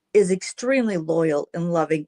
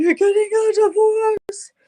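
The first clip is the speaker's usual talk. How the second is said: put-on very high, loud, wailing sobbing cry; 5 dB louder than usual. Retelling hearing from mother that dad wasn't coming home, imitating crying. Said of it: "And I broke out crying".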